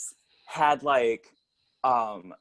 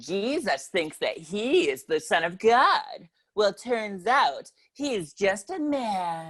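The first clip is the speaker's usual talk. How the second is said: campy, sassy, drawn-out male delivery, pitched up; 7 semitones higher than usual.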